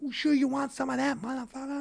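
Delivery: acted-out raspy, rough, high-pitched ringside shouting. Retelling what a fighter shouted from ringside after a knockdown: imitating someone shouting. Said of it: "he's shouting".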